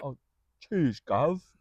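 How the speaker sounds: put-on proper English accent. Acting out what people would say, in a put-on proper English accent. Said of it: "Perfect English".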